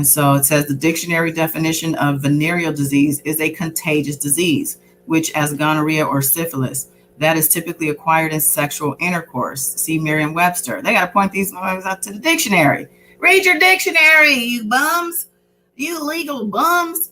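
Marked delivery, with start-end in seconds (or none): 13.2-17.1 angry yelling, rising pitch. Reading a court ruling aloud and reacting to it: yelling at the paper. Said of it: "I'm yelling at the paper".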